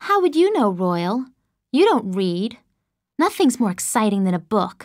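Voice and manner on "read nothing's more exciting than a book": ordinary delivery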